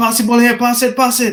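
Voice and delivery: acted high shouting. Recalling football with kids who couldn't understand him, retell his own shouting. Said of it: "I'd be shouting".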